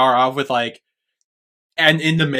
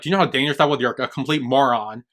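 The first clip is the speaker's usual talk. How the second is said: normal talking voice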